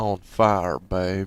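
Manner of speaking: slowest, heaviest, low-pitched southern drawl. Told to say the line, a performer does a take in the slowest, most southern voice possible. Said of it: "with the slowest, most southern voice possible".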